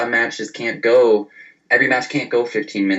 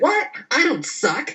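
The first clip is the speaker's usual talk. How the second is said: high-pitched, shrill, drawn-out holler. Recapping a wrestling match to a co-host, retelling Dana's yell at the band. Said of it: "yelling at the band".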